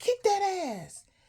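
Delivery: put-on squeaky, very high little baby voice. Retelling what kids in a film said: imitating a little baby voice. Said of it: "hearing the little voices saying".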